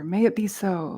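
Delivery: ordinary talk, nothing marked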